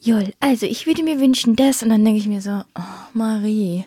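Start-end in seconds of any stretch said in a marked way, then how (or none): 0.0-1.8 put-on, forced, fake calm voice. Describing how she talks when angry, imitating Marie's fake calm voice. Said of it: "Und dann mach's richtig fake".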